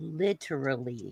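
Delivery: "literally" said slowly, carefully, deliberately. Admitting they must slow down to say the word, slow careful literally. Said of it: "I have to slow down and really process and think and say".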